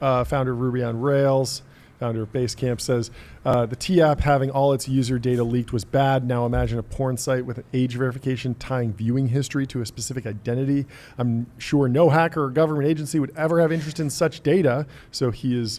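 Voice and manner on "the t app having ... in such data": ordinary talk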